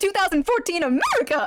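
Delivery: own high soprano register. Repeating a line from own old video, imitating own old soprano voice. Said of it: "can my voice even do that anymore?".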